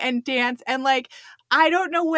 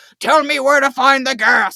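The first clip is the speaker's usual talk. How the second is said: loud, pushed-out gravelly voice; 7 dB louder than usual. Retelling a TV scene, Jack Bauer interrogating a dying Gare, in gravelly voice. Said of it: "he's like doing his gravelly voice at him".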